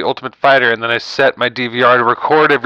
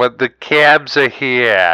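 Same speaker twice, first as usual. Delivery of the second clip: poor, unconvincing fake New Jersey accent. Try to show another speaker how Jersey sounds, in a bad Jersey accent. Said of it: "Still not Jersey".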